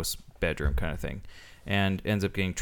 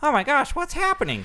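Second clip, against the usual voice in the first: put-on very high, squeaky, loud twelve-year-old nerdy kid voice; 6 dB louder than usual. Describing a warrior character's inner monologue, voiced like a nerdy 12-year-old. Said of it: "talks like a 12-year-old nerd".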